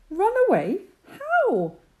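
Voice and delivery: very high, fretful, anxious little rabbit voice. Reading the rabbit's question after being told to run away, anxious. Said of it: "asked the rabbit anxiously".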